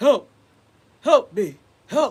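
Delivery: loud, slow little cartoon king voice. Describing a phone game ad with a little king: little king voice. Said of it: "it's like a little king".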